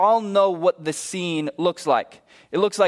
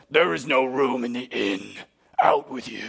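mean, low, gruff voice; 6 semitones lower than usual. Telling a Bethlehem story, voicing the innkeeper answering the knock: gruff, mean innkeeper. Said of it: "very gruff, very mean innkeeper".

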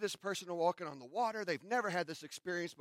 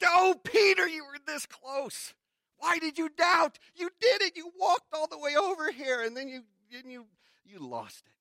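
mock disappointed yet proud, very high, very loud; 10 semitones higher, 9 dB louder than usual. Picturing Jesus speaking to Peter after he doubted, Jesus, mock disappointed but proud. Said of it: "Disappointed, yeah, but but but really proud".

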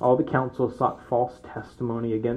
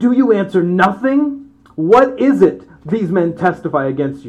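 very loud, high indignant tone; 7 semitones higher, 10 dB louder than usual. Reading the high priest's question aloud: imitating the high priest's indignation. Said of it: "the indignation in the guy's voice".

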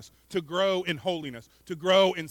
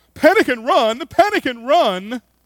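very loud, very bad put-on British accent; 7 semitones higher, 11 dB louder than usual. Speaker voicing the zebras crying out when surprised, bad fake British accent. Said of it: "their very bad fake British accents and cry out".

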